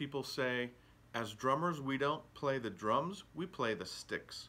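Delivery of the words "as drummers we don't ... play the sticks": usual speaking voice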